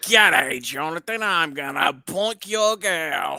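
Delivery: put-on Australian accent. Riffing on feeling like being in the movie, in an Australian accent. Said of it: "Why is [name] Australian?".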